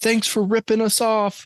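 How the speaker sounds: very high, shrill, high-pitched yell. Retelling how the brother yelled from the back, retelling a yell. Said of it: "he yells from the back".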